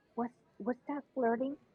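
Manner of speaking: speaking in a whisper. Leaning over in character so another character won't hear: whispering. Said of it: "try to whisper so Terraminder doesn't".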